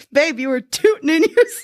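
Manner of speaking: speech mixed with laughter. Retelling what the boyfriend said one morning: imitating someone saying it with a laugh. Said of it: "he said it, like, with a laugh".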